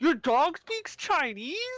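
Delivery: put-on very high voice, talking through a stuffed mouth. Retelling a clip where a woman's friend reacts to her dog, imitating talking with mouth full. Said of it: "mouthful of food, just goes".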